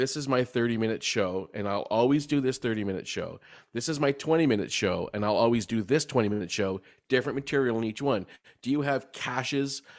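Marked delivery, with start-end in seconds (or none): none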